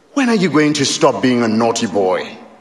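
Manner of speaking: ordinary talk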